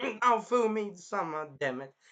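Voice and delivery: slow, fed-up, angry complaining tone. Retelling a scene from the episode, imitating angry Raphtalia. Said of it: "angry as shit".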